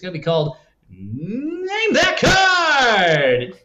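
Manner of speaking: very slow, loud, swooping game show host announcer voice. Speaker announces the name of a new segment, in a game show hosty voice. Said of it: "do my most like game show hosty voice".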